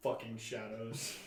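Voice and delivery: muttering under breath. Muttering a curse in character at an inn: muttering under breath. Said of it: "I mutter under my breath".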